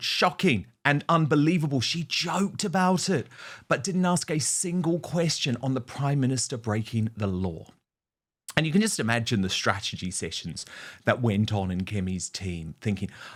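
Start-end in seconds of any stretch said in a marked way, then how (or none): none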